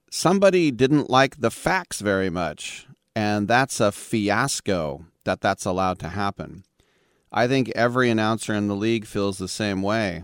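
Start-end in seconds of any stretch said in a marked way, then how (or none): none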